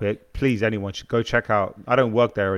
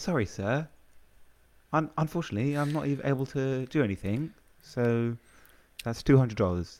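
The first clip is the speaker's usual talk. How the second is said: fake posh voice, much quieter; 4 semitones higher, 6 dB quieter than usual. Acting out a retail worker addressing a customer as sir, in a put-on posh voice. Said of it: "Someone would put on their posh voice".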